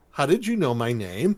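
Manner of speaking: ordinary talk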